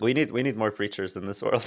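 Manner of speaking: usual speaking voice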